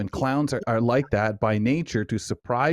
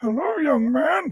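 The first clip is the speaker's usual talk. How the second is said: terrible, very high-pitched voice, pitched way up badly. Retelling meeting a clown at an event who greeted him: imitating Ronald McDonald's terrible voice. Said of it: "it came out more like".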